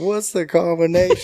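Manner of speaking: high-pitched yelling. Recalling being stuck at the locked truck, yelling at you; retelling a yell. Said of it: "So I'm yelling at you".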